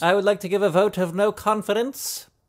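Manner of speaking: put-on English accent. Playing with accents in conversation: put-on english accent. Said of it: "Are those your two English accents?".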